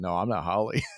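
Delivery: put-on dry delivery. Speaker repeats the actor's reply from the scene, imitating a dry delivery. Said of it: "he says it so dryly too".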